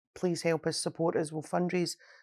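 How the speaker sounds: plain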